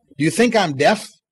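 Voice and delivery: normal talking voice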